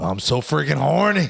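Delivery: rough-edged, raspy, creaky film-character voice, squeezed high. Quoting a gross movie character from an elevator scene: imitating Philip Seymour Hoffman's Along Came Polly character. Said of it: "quote that character all the time".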